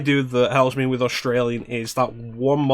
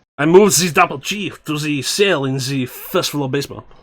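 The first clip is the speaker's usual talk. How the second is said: French-accented delivery; 2 semitones higher than usual. Voicing a genome soldier line on request: French accent. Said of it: "how about French?".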